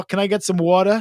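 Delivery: totally fake New York accent. Telling how Maya does the worst New York accent, imitating Maya's fake New York accent. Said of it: "like totally fake New York".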